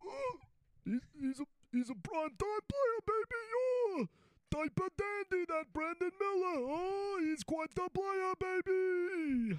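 put-on very high hyped-up call, "baby" stretched long. Doing an impression on request: Dick Vitale impression. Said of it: "that's his Dickie V impersonation".

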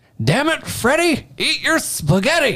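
put-on twangy southern accent, very high-pitched. Retelling your dad's outburst at his kid during dinner, in a twangy accent. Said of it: "in that twang and that accent".

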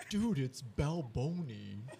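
casual, relaxed bro-style buddy voice. Retelling a phone call from a friend: Balboni impression. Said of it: "doing a fucking Balboni interpretation".

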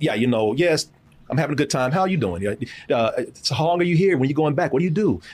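mellow, relaxed, easygoing tone. Retelling how he chatted with a woman after a few drinks, retelling his own mellow tone. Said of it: "I've changed my demeanor just a little bit to show I was talking like".

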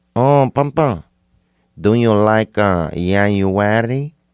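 put-on Mexican accent. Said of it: "it's racist to do a Mexican accent".

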